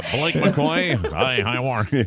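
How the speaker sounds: slow, cartoonish voice. Imitating a co-anchor he has never seen or heard: Simpsons-style voice. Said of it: "it's a Simpsons voice".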